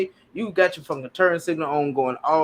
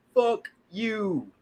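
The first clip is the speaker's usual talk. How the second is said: very slow, deliberate, drawn-out, pitched up; 6 semitones higher than usual. Retelling telling off a driver at a light: saying it real slow. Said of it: "Real slow so you understand".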